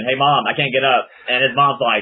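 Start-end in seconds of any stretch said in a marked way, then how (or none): none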